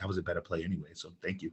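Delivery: soft, very hushed half-whisper. Retelling what a coach would half-whisper to him: imitating Tip half-whispering. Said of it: "Tip would always come to whisper to me".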